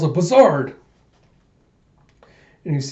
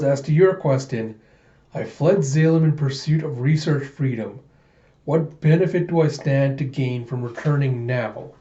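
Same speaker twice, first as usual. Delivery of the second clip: plain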